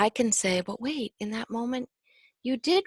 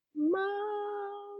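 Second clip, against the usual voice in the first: timid, very high, hushed, drawn-out frightened call; 11 semitones higher, 6 dB quieter than usual. Recalling calling for mother after a nightmare: imitating a quiet scared call. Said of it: "like so quiet and scared".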